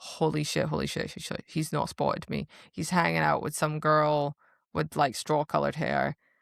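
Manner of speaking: plain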